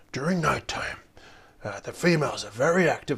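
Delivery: nature documentary narrator voice. Redoing a nighttime tip as an impression: David Attenborough narrator voice. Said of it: "let's do a David Attenborough voice".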